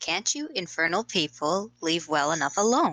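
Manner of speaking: furious, fed-up, very angry outburst. Playing a character who answers the door, very angry. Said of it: "very angrily say".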